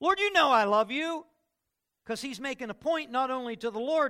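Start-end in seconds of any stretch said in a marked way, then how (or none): 0.0-1.3 animated, very high and loud, raised. Imagining a man answering the Lord: more animated, voice raised. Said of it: "Imagine he got a little bit more animated. Imagine his voice went up a little bit".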